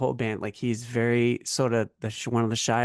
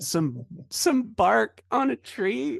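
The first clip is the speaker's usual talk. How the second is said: put-on strange dying laugh, very high; 12 semitones higher than usual. Retelling a kid's answer to other kids on a bus, mock weird dying laugh. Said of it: "Like a weird dying laugh".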